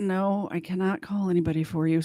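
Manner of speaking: put-on calm voice. Retelling a jail worker's reply at three a.m., imitating a calm reply. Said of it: "So calmly".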